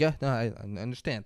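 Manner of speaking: timid, submissive, cowering and meek voice. Retelling a movie scene, the doctor answering the armed father: imitating a cowering, meek reply. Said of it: "Like a bitch".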